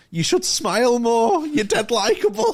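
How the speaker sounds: high, loud, cheesy flirtatious voice.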